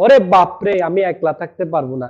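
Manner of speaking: plain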